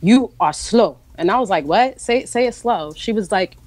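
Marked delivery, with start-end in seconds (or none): 0.0-1.0 put-on thick, heavy non-native accent on English. Retelling what the doctor said to the speaker, in a heavy accent. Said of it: "with a heavy accent".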